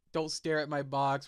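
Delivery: ordinary delivery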